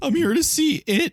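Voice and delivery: put-on very high voice, cracking like a twelve-year-old's. Acting out kids sneaking into a movie: voice cracking twelve-year-old. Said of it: "Like a voice cracking twelve-year-old".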